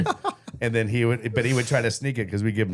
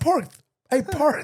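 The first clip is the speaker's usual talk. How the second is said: put-on child voice with lisp, much higher pitched. Speaker retells how Shane called out to Parth, imitating Shane's lisp. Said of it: "he said it with a lisp too".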